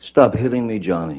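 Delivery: upset, panicky, high-pitched, freaked-out scream. Retelling a woman screaming at johnny during a phone call, imitating freaked-out upset screaming. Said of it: "she's screaming in in her best um, freaked out, upset voice, high pitched".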